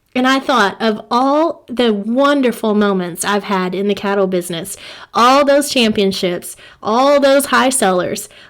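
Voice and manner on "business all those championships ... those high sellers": ordinary talk, nothing marked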